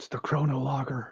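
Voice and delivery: unvoiced, hushed whisper. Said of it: "Why are we whispering?".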